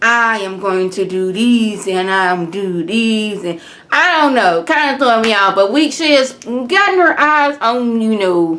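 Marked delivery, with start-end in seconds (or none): 0.0-3.4 very slow, deliberate, drawn-out, word-by-word delivery. Imitating Anais in her confessional: imitating Anais talking very slowly. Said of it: "she talks real slow when she's in her confession".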